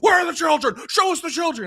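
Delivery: very high-pitched, demanding call. Retelling a video of Alex Jones outside a bus: Alex Jones impression. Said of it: "he's just outside of a bus going like".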